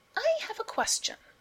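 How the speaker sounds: loud, very high-pitched. Miles cuts in before the topic can go further: said loudly. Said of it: "Miles said loudly".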